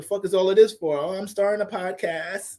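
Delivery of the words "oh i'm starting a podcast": put-on slow, ditzy airhead girl voice. Acting out someone answering a helper outside Best Buy, airhead ratchet girl voice. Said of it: "Why my girl voice is always sound?".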